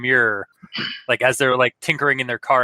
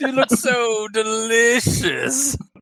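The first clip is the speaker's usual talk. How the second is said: put-on slow, drawn-out lady voice, higher; 9 semitones higher than usual. Imitating the other speaker's voice for the lady behind the door: drawn-out lady voice. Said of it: "The very, like, drawn out".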